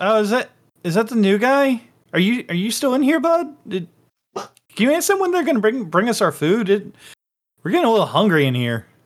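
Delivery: bewildered-sounding voice. Voicing someone calling out to the new guy, confused-sounding voice. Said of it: "this kind of like confused sounding voice".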